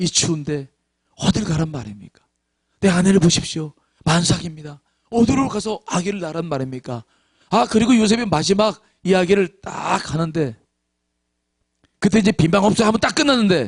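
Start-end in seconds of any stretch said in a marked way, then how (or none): 0.0-7.0 acted, pleading, begging tone. Retelling a school play, speaker gives the character's last plea, acting out a plea. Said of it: "이렇게 사정하겠습니다".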